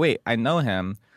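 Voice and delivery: ordinary talk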